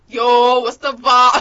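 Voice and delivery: very loud put-on New York accent. Mimicking the other speaker's accent back at him, put-on New York accent. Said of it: "Let me get on your level".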